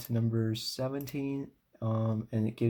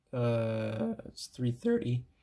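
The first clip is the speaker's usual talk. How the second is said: voice breaking. Speaker working through practice problems says the time, voice cracking. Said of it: "Voice crack".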